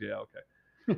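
hushed, gone-quiet, subdued delivery. Retelling his reply after being corrected: imitating someone going quiet. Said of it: "he got really quiet".

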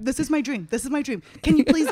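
put-on frantic, freaking-out voice. Retelling a friend's excited FaceTime request: imitating Peter freaking out. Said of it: "freaking out".

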